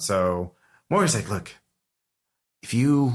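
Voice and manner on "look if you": put-on whispered character voice, higher. Voicing Morgan talking privately with Ramsey: whispering as Morgan. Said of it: "as they start whispering to each other".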